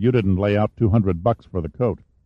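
plain

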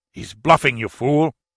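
open disgust, scornful and contemptuous. Halcón answers Guzman, who has just sounded alarmed; disgusted. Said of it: "Halcón replied with disgust".

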